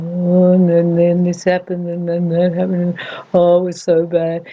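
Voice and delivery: drawn-out, whiny gripe. Describing how negative people talk, the speaker demonstrates a slow, low, whinging voice. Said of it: "It has that really slow, low voice".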